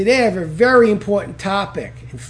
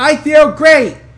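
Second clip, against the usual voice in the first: loud, slow, forceful, belted out with conviction. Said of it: "Go ahead".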